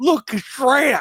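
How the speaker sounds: put-on very high, shrill, alarmed, freaked-out old lady voice. Retelling an old woman's reaction in a video: imitating a freaked-out old woman. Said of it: "I'll never forget the way she says that".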